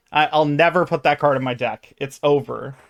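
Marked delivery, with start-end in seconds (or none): none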